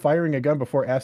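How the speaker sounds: usual speaking voice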